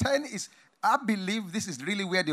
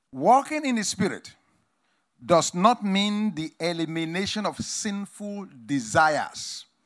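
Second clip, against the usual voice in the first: very slow, deliberate, drawn-out delivery. Teaching listeners about walking in the Spirit, said slowly. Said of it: "I've said that slowly".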